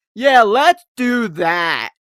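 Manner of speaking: stiff robotic voice, very loud and very slow. Imitating an actress's line in a movie: imitating robotic acting. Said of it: "her acting and everything she does is so robotic".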